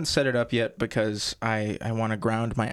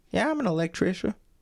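put-on generic girly voice, pitched higher; 8 semitones higher than usual. Speaker joking about a made-up female job word, girl voice. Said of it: "That was my girl voice".

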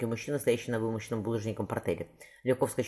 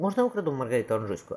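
plain reading voice

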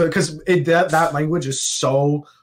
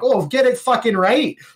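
vague, pitched-up, put-on Canadian accent; 9 semitones higher than usual. Describing how they talk when drunk, the speaker slips into a vaguely Canadian-sounding accent. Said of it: "things that kind of sound remotely Canadian".

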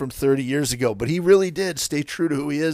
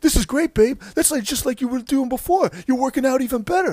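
put-on very high, thrilled, excited gushing voice; 9 semitones higher than usual. Retelling what a man said to a woman at the gym: imitating someone excited. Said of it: "he's like all excited about her workout".

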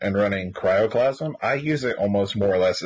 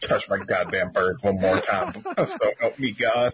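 ordinary talk

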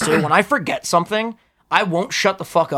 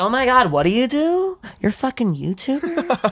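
put-on woman's voice, higher; 8 semitones higher than usual. Acting out a girl at a bar meeting a YouTuber: imitating a girl at a bar. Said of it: "a cute girl at the bar".

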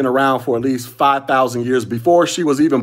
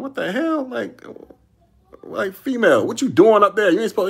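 high, barking put-on drill-sergeant yell; 8 semitones higher than usual. Retelling confronting a female coming downstairs in the barracks: imitating himself yelling. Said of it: "I'm start barking and yelling".

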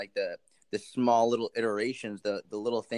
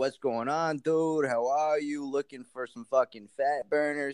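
put-on New Jersey guy accent; 4 semitones higher than usual. Posing as a guy from New Jersey to hear a sales pitch, New Jersey accent. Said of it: "I pretended to be this guy from New Jersey with a New Jersey accent".

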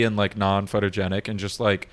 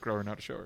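mock whisper, quieter; 16 dB quieter than usual. Retelling pulling the other speaker close to say it in their ear: retelling a whisper. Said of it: "I pull you close and I whisper in your ear and I go".

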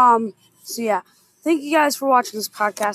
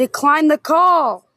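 shouting, higher; 3 semitones higher, 4 dB louder than usual. Interrupted by a cousin's call, ordering it declined: yelling. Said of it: "Should not be yelling at you like that".

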